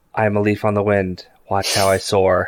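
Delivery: whispering quietly to himself. Voicing Mal as the ship descends to land: Mal whispering to himself. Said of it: "Mal just kinda whispers to himself".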